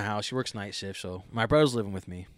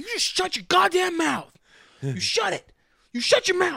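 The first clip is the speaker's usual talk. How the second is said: shrill, very high, swooping yell; 7 dB louder than usual. Retelling walking up to the neighbor's dog, acting out yelling at it. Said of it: "I'm yelling at the neighbor's fucking dog".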